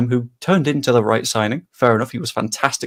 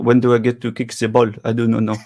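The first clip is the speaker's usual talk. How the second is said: convincing put-on French accent. Imagining a footballer during contract talk, speaking in a good french accent. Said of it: "it's a very good French accent as well".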